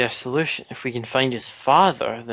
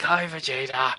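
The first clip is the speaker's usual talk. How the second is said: acted slow-witted brute voice. Likening the other player's character voice to Nappa: imitating Nappa. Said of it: "It's like".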